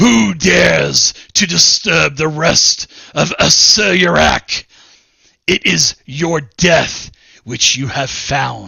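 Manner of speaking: big, booming, rough-edged proclaiming voice. Narrating a game, the speaker voices a figure challenging intruders: booming voice. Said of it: "with his booming voice".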